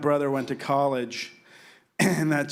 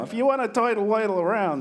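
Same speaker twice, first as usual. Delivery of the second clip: put-on high-pitched New York accent, turtle said as toidle; 8 semitones higher than usual. Recalling playing a role in Music Man, the speaker demonstrates a New York accent. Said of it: "I was the only one with a New York accent".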